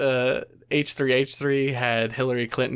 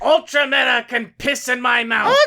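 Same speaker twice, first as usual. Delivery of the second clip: put-on crazy shrill voice, higher and louder; 11 semitones higher, 5 dB louder than usual. Doing a mock celebrity cameo praising the channel: Gilbert Gottfried impression. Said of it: "Gilbert Gottfried?".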